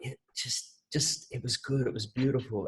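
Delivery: barely audible, very quiet whispering. Retelling coming back from a silent retreat to a friend: imitating own past whisper. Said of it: "why are you whispering?".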